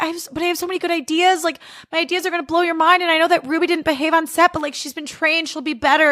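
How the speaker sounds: put-on gentle, high, pleading beg. Retelling a man told his Nickelodeon show is canceled, imitating someone begging. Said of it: "he's like begging them".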